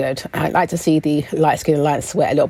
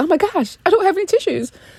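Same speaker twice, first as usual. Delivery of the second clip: high-voiced, pitched-up fussing delivery. Retelling a car scene where someone starts crying: imitating Candice. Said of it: "She goes".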